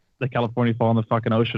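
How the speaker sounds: normal talking voice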